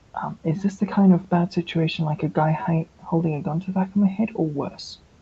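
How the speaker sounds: whispering. Playing a character who starts whispering to Raven: whispering in character. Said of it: "she'll start whispering to Raven".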